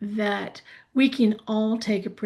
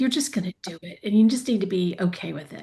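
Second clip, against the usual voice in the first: acted-out, coaxing motherly tone with menace underneath. Retelling coaxing a reluctant presenter into sharing: imitating own mommy tone. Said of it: "put a mommy tone in my voice".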